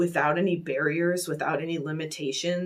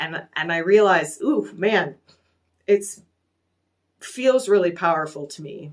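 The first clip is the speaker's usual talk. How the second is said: emotional, swept up, raised voice; 6 dB louder than usual. Speaker moved by the power of their own message, emotional. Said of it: "I'm getting emotional".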